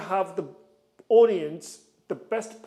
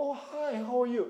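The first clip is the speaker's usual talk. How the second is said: soft, gentle, slow, friendly voice; 6 semitones higher, 4 dB quieter than usual. Demonstrating how to greet a friend you see nearby, a friendly greeting to a friend. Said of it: "it's like you see your friend".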